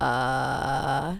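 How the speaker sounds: low, creaky, rattling vocal fry below normal range. Voice exercise, showing the vocal fry below your lowest pitch: vocal fry. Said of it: "avoiding vocal fry right below your lowest pitch, which would sound like this".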